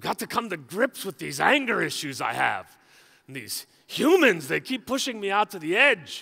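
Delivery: put-on relaxed, easygoing Irish accent. Speaker imagines God lying on a couch in the heavens, as God in an Irish accent. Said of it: "I don't know why I think God has an Irish accent".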